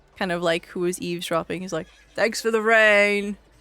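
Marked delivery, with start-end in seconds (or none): 2.2-3.3 different voice, the word "rain" drawn out. A game narrator voices an eavesdropping man heard through a door, in a deep voice. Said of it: "a deep voice".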